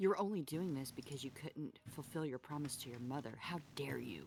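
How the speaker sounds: whispering in a put-on voice. Casting a spell in a game, whispering into an enemy's mind: whispering in character. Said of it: "I whisper".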